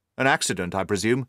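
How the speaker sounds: ordinary delivery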